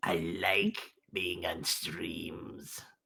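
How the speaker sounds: tiny goblin voice, very low, quiet and hushed. Answering whether they want to join streams: little tiny goblin voice. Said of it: "I turned into a little tiny goblin".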